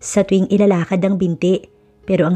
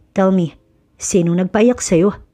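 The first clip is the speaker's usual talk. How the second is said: ordinary delivery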